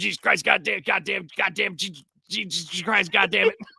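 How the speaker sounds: mock-agitated cursing outburst. Recalling a man who coached Steven to shoot a gun, imitating his cursing fits. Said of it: "And he would just go".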